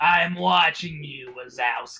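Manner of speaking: put-on gravelly monster voice. Showing how the recovered voice sounded, doing a gravelly Sully monster voice. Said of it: "that character's name from uh, Monsters Incorporated".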